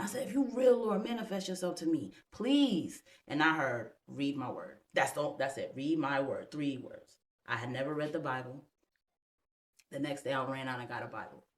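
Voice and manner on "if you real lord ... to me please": mock tearful pleading, crying. Speaker recounts praying to the lord from the floor, retelling a crying prayer. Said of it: "I'm on the floor crying".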